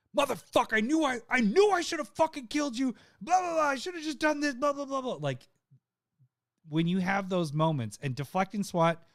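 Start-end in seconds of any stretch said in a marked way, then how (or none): 0.2-5.2 very high-pitched, furious, raging outburst. Retelling how Trombley reacted after losing: imitating Trombley losing it. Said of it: "he lost his shit after that".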